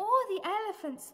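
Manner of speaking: ordinary delivery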